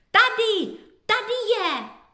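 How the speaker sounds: very high, loud, glad, joyful cry. Frightened children searching for Beník finally find him, crying out joyfully. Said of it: "A potom radostně vykřikli".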